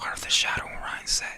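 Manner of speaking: whispering quietly to himself. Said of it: "I'm just whispering in my head".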